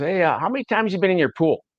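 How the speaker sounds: put-on Boston accent, pitched very high. Retelling how a man asked a kid about his pool, in a Boston accent. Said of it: "With that, you know, Boston accent".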